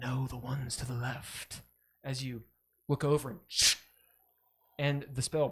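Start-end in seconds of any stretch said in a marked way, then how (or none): 0.0-1.6 gravelly, rough arcane voice, quieter. Describing a voice the listener hears in their head, gravelly arcane voice. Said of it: "in this like gravelly arcane voice".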